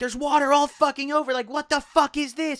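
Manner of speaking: high, pissed-off, whiny complaining voice. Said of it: "She's pissed as fuck".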